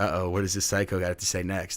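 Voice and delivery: ordinary talk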